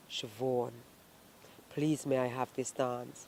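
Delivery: very deep, soft, hushed murmur. Retelling being asked to dance, imitating Aubrey's deep voice. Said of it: "the way his voice went deep".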